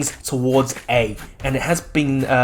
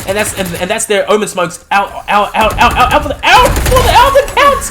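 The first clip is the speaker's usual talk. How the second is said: high, loud, excited stutter, tripping over words; 8 semitones higher, 9 dB louder than usual. Commentating a tense round as players go down, excited stuttering. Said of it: "I'm stuttering right now because this is too intense".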